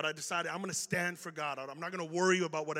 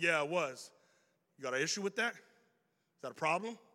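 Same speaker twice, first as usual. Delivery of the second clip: normal talking voice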